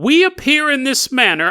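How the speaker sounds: put-on upper-class British accent. Retelling a story, the speaker voices a telepathic being answering a woman: posh british accent. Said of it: "It has a posh British accent".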